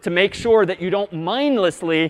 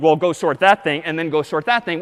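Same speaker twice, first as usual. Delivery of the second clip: usual speaking voice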